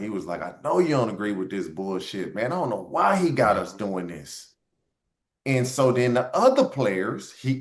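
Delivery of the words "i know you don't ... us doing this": muffled, lower voice, as if behind a hand. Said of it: "talking like this with his hand over his mouth".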